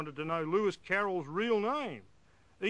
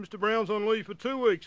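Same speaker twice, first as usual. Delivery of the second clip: raised voice, feigned cluelessness, playing dumb; 4 semitones higher, 5 dB louder than usual. Retelling talking to a consultant on the phone: retelling playing dumb. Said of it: "I tried to play dumb".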